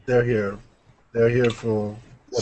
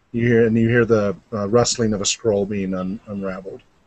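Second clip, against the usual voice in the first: normal talking voice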